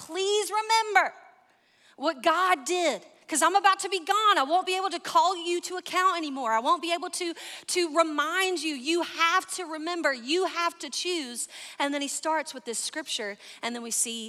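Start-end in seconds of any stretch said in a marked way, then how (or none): 0.0-11.5 desperate pleading, pitched higher. Retelling Joshua's final word to the people, the speaker is imitating his desperate pleading. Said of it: "you can hear the dad desperation in his voice".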